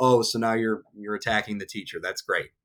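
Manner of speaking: openly sarcastic, obviously ironic tone. Reacting to a student's careless email to a teacher: sarcastic. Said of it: "I know you can tell I'm being sarcastic".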